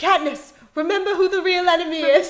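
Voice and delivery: put-on loud, high-pitched British accent, belted out. Retelling a TikToker's joke about a movie scene: British-sounding Finnick voice. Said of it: "he sounds British too".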